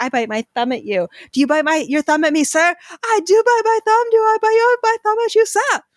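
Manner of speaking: very high, playful, cheeky taunting. Recalling quoting a movie's thumb-biting scene with friends, mock-cheeky movie quote. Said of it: "We thought we were so cheeky".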